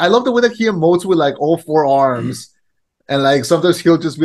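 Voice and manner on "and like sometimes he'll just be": ordinary talk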